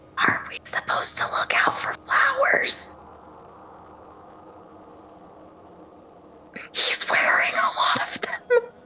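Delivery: soft, breathy whisper under the breath. Speaker retells what they whispered to Kaz, whispering. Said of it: "I whispered to him and I said".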